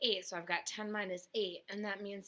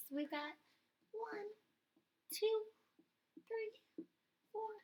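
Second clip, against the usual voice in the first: put-on baby voice, higher pitched; 14 semitones higher than usual. Counting crossed-out bottles aloud with the class: baby Cairo voice. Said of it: "Let's do a little baby Cairo voice".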